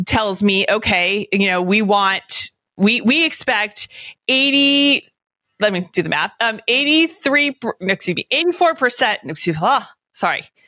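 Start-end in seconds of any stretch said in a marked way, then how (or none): 3.0-10.4 tripping over words, backtracking, self-correcting ramble. Doing subtraction aloud while explaining invoicing: stumbling over words. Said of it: "and I'm stumbling here".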